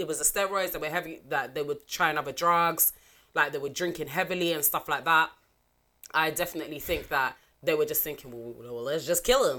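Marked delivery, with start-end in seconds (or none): 8.3-9.6 put-on Florida accent, laid on, dropped low. Voicing what he thinks the others were thinking; Florida accent. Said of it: "Was that your Florida accent?".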